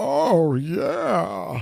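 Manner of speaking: put-on voice, rough, creaky, rasping and pitched high. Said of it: "he's doing Bane's voice".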